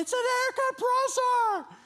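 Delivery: high, slow scream. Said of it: "we're screaming".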